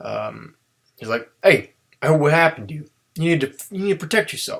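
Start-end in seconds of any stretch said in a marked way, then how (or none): 1.4-4.6 bad, rough East Coast accent, pitched up. Retelling a scene, voicing a character with a bad East Coast accent. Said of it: "he's got a like whatever East Coast accent".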